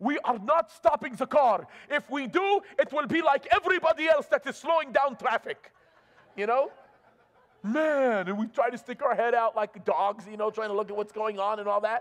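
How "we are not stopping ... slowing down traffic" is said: put-on speaking with a Middle Eastern accent. Speaker quotes his dad refusing to stop the car, strong Middle Eastern accent. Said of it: "in his very strong Middle Eastern accent".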